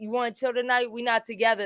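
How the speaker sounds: ordinary talk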